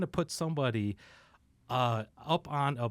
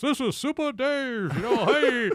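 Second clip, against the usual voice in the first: fake radio voice, very high, squeaky, slow; 11 semitones higher, 6 dB louder than usual. Recalling calling a radio show where nobody saw him, fake Super Dave voice. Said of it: "I had to like do a fake voice".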